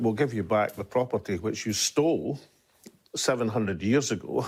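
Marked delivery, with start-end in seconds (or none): none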